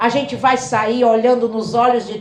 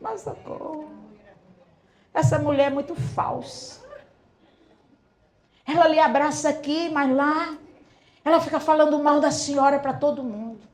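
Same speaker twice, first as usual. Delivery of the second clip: weepy, tearful, crying through tears; 4 semitones higher, 7 dB quieter than usual. Retelling what the church sisters said as they arrived in tears: imitating crying church sisters. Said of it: "diziam assim, chorando".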